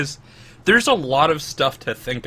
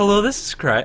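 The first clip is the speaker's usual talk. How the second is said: very friendly receptionist phone voice; 7 semitones higher than usual. Showing how answering the phone sounds: very friendly secretary phone voice. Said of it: "a very friendly, um, secretary sort of voice".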